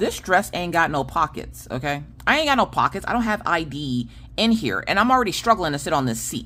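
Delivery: ordinary talk, nothing marked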